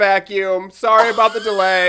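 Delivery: loud yelling with an apologetic tone. A customer retells how the cashier announced his purchase to the line, imitating her yelling. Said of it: "she's yelling my business to all these people".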